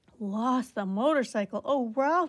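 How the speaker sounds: loud, genuinely alarmed cry. A mother hears her son lost the motorcycle, an alarmed cry. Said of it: "cried his mother, genuinely alarmed".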